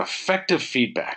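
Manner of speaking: slow, leaning hard on the word effective.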